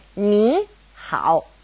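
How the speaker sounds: ni in rising second tone, hao in dipping third. Showing learners the easier way: first syllable rising second tone. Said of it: "the first one becomes a second tone".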